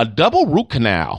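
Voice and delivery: plain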